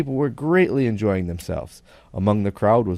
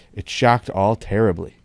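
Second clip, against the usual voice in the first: plain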